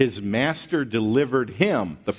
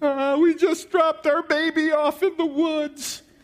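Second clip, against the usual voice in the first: very high, weepy sobbing voice. Retelling what his crying passenger told the trooper: mock crying. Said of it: "she starts crying".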